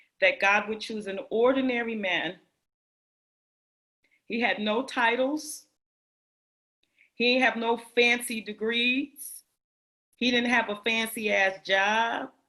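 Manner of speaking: holding back tears, pushing through without breaking down. Speaking about an ordinary man god chose, holding back tears. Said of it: "I'm gonna try to say it without crying".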